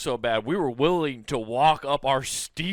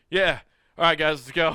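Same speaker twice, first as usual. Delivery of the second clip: mock businesslike, no-fuss, unbothered, matter-of-fact tone; 3 dB louder than usual. Retelling how the other speaker reacted after the accident: imitating Nathan, very matter of fact. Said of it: "This is very matter of fact".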